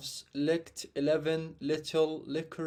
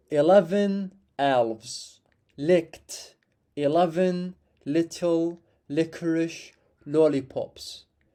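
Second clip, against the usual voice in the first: slow, loud, deliberately drawn-out delivery; 5 dB louder than usual. Demonstrating a tongue twister for learners to repeat, said slowly. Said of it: "I will say twice slowly and a bit faster".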